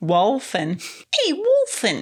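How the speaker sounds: bad fake New York accent. Trying out how to say the wolf's name, the speaker uses a terrible New York accent. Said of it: "terrible New York accent".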